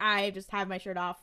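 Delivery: ordinary delivery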